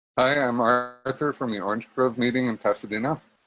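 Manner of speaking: speech through a mouthful of food. Just unmuted in an online meeting, introducing oneself: talking with mouth full. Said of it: "Caught me with my mouth full".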